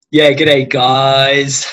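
very loud, hammed-up, thick Australian accent. A guest introduces himself on Quarantine Cocktail Hour, in an exaggerated thick Australian accent. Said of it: "this is not actually how thick my accent is".

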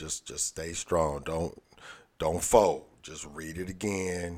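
hushed, under-the-breath stage whisper, half-whispered. Retelling urging a struggling voter to read again: retelling a half-whisper. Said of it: "I whispered to one".

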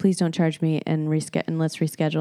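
normal talking voice

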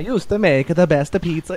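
put-on high-pitched, laid-on Italian accent. Reading out a direct quote from Pizza Face: Italian accent as Pizza Face. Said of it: "I'm going to do this Italian accent for this pizza guy".

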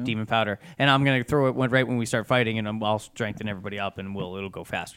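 plain

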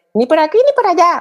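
very high-pitched voice with a motherly manner. Speaker catches themself talking to someone just like their mother: imitating the speaker's mother. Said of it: "más con voz de mi madre".

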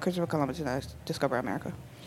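flat, very soft, low, hushed deadpan. Retelling answering a woman's remark about Columbus, retelling a deadpan reply. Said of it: "I said it just deadpan".

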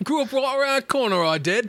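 very high, proud put-on British accent. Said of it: "purely British".

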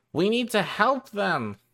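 very high put-on animal critter voice. Voicing an animal answering a speak-with-animals spell: put-on animal voice. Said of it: "amazed by the voice that I just did".

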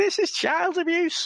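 little squeaking put-on Scouse voice, very high. Retelling a scene where he pulls the baby up, squeaky little Scouse voice. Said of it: "in this squeaky little Scouse voice".

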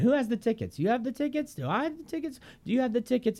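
rapid stand-up comedian patter, very high pitched. Doing a comedian's bit for others to guess: Jerry Seinfeld impression. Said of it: "He sounds like this".

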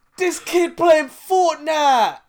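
very high, loud, slow mock excited shout.

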